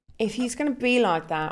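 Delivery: put-on British accent in a young woman's voice.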